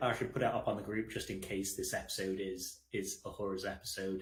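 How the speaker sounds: usual speaking voice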